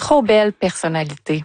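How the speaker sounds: ordinary delivery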